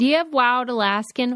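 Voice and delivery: put-on Pittsburgh accent. Retelling how a friend orders salmon: imitating a Pittsburgh accent. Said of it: "she says it with a Pittsburgh accent".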